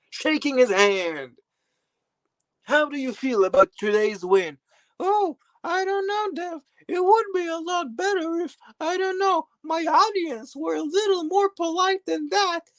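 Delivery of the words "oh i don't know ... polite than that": squeaky, very high-pitched tiny voice. Voicing a Givenchy mini bottle that just won: high-pitched Givenchy bottle voice. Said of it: "Why do you sound so high-pitched".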